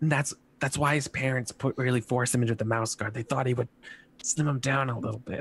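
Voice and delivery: hushed, quiet whisper. Voicing a woman character in a shared story: whispering. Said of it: "and she she whispers".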